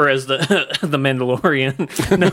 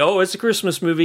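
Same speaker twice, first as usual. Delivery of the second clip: put-on mocking tone, higher pitch; 4 semitones higher than usual. Imagining how somebody could respond to a film pick, imitating a mocking remark. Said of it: "somebody could like mockingly say".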